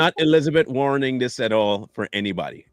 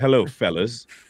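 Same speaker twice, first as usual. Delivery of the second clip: put-on polite voice, pitched lower; 4 semitones lower than usual. Showing how Mike would greet everyone: imitating Mike. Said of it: "Mike would say".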